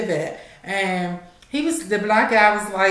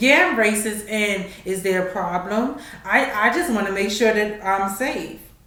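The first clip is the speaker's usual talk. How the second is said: usual speaking voice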